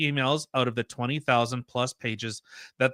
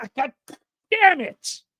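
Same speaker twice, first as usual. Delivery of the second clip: acted, very shrill, loud, exasperated, frustrated cursing outburst; 6 dB louder than usual. Retelling how others reacted to a chatbot answer, imitating a frustrated outburst. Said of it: "And they went".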